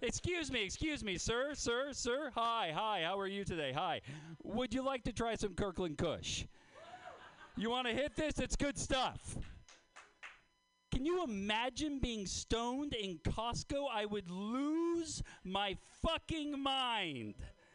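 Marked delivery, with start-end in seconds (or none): 0.0-9.4 friendly, projected calling-out voice. Acting out a sample table offering weed to shoppers: acting as a sample table server. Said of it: "what is that sample table going to look like?".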